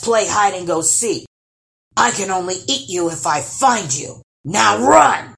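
loud, booming fairy-tale troll bellow. A narrator reads a troll's lines to Lars in a story, bellowing. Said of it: "bellowed the troll".

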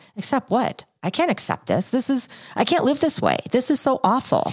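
high, wide-ranging pitch, panicky inner-voice sound.

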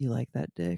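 voice brought down low. Demonstrating dirty talk after being pushed to try it: lowered voice. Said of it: "I'll lower my voice".

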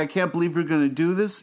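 normal talking voice

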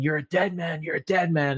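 mock restrained screaming tone, mild repeated yell. Retelling how Hangman gets in Swerve's face: imitating Hangman screaming. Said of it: "he's screaming".

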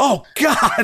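very high, stunned, shocked outcry. Retelling how the announcer reacted as a wrestler was thrown over two guardrails, Tony Schiavone impression, shocked outcry. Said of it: "you hear Tony Schiavone go".

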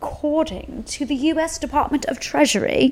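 put-on British accent, slightly high. Starting to explain the debt limit, slipping into a put-on british accent. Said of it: "I don't know why I'm using a British accent".

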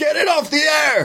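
screaming. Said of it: "he just starts screaming this repeatedly".

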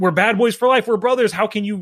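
high, hurt, defiant attitude. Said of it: "That kind of attitude".

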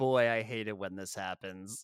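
put-on smug tone. Retelling how a man asked if he's really Santa answers, mock-smug. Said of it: "says smugly".

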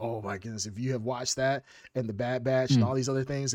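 usual speaking voice

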